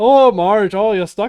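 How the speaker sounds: put-on Minnesota accent, Midwest Canadian-sounding. Riffing on a farmer calling to Marge stuck in a gate, Midwest Canadian accent. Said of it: "the fucking like Midwest slash Canadian accent".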